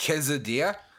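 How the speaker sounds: mock odd pronunciation of the word quesadilla. Mocking another speaker who says quesadilla weirdly: imitating his odd pronunciation. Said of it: "You say quesadilla really weird".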